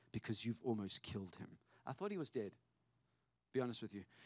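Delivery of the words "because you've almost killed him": low mutter, half to oneself, under the breath. Retelling angry words said to a community: retelling muttering under breath. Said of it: "I said under my breath".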